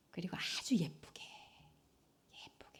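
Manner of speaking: soft, hushed, whispered coaxing tone.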